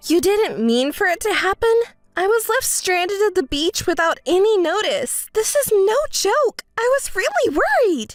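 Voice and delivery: mad, upset, high-pitched angry scolding. Left stranded without notice, the speaker confronts the one who left, angry. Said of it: "Don't be so angry".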